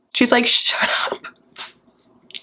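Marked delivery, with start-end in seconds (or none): 0.4-1.2 voiceless whisper under the breath. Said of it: "Just kidding".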